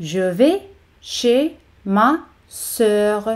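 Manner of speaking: very slow, each syllable said separately.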